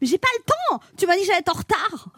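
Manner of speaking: put-on high, fast, whiny teenage voice.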